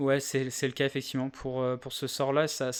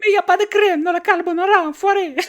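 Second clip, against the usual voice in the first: shrill, loud, high, shouted put-on Italian accent; 13 dB louder than usual. Acting out a character's first words in the dialogue, in an Italian accent. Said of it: "tu vas être obligé de tenir un accent italien".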